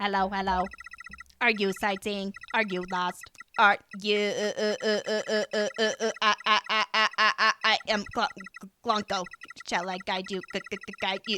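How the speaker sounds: put-on robotic character voice. Speaker greeting newcomers as a robot character, robot voice. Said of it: "This is just going to be another robot voice".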